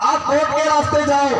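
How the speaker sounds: ordinary talk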